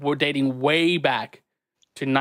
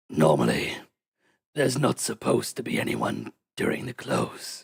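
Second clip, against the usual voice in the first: rough, raspy, breathy voice on a rasping breath; 3 semitones lower than usual. Speaker narrating a game, voicing a character who speaks: raspy breathy voice. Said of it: "speak in a raspy breath and goes".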